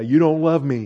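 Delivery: put-on sobbing, tearful, crying child voice. Retelling how dad accused his mother after a spanking: imitating someone crying. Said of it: "And he'd be crying 'cause she spanked him".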